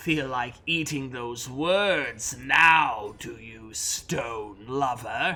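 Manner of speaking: low, slow, drawn-out hissing demon voice. Game master voices a demon speaking to the party, hissing demon voice. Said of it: "the demon hisses at us".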